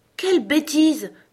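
very high, loud, shrill, firm, decisive outcry. A girl responds to the queen's screaming: loud and decisive. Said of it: "s'exclama Alice d'une voix forte et décidée".

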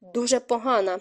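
plain reading voice

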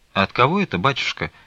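wary, mistrustful, suspicious tone. Nazareta questions the stranger who has brought a letter, asking distrustfully. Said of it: "недоверчиво спросила Назарета".

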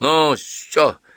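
fearful, scared, frightened mumbling mutter. A husband, glancing at another man, answers his grumbling wife: frightened mutter. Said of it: "испуганно пробормотал Петр Иванович".

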